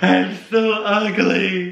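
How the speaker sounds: high, slow, tearful crying wail.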